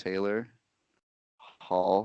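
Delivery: hushed, very quiet, hardly audible. Retelling how a man leaned in and answered after staring, retelling a very quiet remark. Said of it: "says very quietly".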